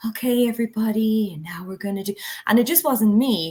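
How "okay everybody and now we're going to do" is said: weird, calm, put-on zen yoga teacher voice. Recalling how they spoke when they first started using drama, weird fake yoga teacher voice. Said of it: "weird fake like yoga teacher voice".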